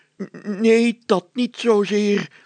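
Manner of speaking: very high, drawn-out groaning moan. A narrator reads the mayor's answer to the constable: groaning. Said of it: "kreunde de burgemeester".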